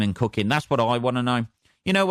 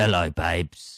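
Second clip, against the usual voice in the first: put-on very low, gruff older woman's voice; 5 semitones lower than usual. Quoting how a date greeted the speaker, in a bit of a gruff old voice. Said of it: "Just a bit of a gruff old voice".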